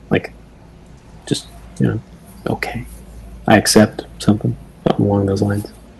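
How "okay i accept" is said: soft crying under the breath, hushed murmur. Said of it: "super quiet beneath her breath".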